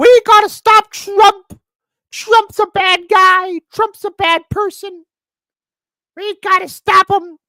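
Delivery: very high, shrill, loud, all-out shrieking scream. Criticizing Nancy Pelosi, acting out her screaming from the rooftop, mock-screaming Nancy Pelosi. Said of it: "she was screaming from the rooftop".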